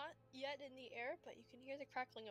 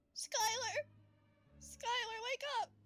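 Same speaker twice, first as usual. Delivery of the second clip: put-on little kid calling out, much higher, louder; 12 semitones higher, 9 dB louder than usual. Game master voicing a little kid trying to wake skylar, little kid calling out. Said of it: "you hear the little kid go".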